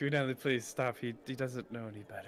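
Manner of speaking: whispering in a character voice. Speaking in character to a companion about Johnny: whispering in character. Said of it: "I whisper to you".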